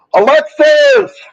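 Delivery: very high, loud yell. Speaker calls out to Alexis while talking to viewers: yelling. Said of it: "Sorry for yelling".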